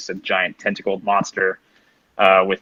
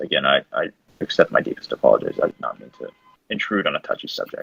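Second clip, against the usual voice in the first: soft, hushed whisper; 6 semitones lower than usual. Voicing a character on one knee, apologizing to someone: whispering. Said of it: "he's whispering this to her".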